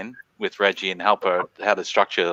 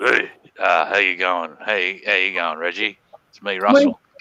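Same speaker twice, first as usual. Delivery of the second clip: bad, sing-song swooping celebrity voice, badly on purpose. Pretending to phone Reggie as Russell Crowe: bad Russell Crowe impression. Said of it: "trying to do a bad impression of him".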